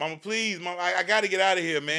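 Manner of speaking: imploring, begging tone. Calling from jail, pleading with mama to bail them out, begging. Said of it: "You begging like a little girl".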